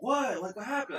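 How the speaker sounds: very high, repeated, called-out yelling, acted out. Retelling hearing a voice in her house and shouting back: retelling own yelling. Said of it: "And then I kept yelling".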